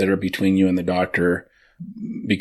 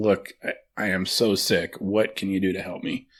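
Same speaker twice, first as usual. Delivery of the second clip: earnest, begging, imploring and pleading tone; 4 dB quieter than usual. Retelling how the listener argued with the doctor: imitating someone pleading. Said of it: "You're just pleading with him".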